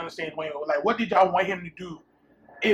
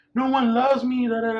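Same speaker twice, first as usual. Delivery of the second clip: put-on high, tearful, sobbing small child voice; 5 semitones higher, 3 dB louder than usual. Retelling how a three-year-old niece cried when locked out: imitating a crying child. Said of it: "she busted out crying like".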